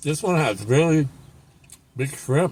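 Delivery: speaking with a mouth full of food. Eating a shrimp taco on camera, talking with mouth full. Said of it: "I'm talking with my food in my mouth".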